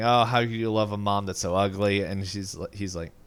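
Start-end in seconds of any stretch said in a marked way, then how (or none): none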